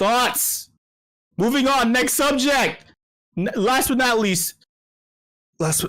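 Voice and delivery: high unrestrained yelling. Speaker on first day doing ASMR moves to the last subject, yelling. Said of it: "I keep I keep yelling".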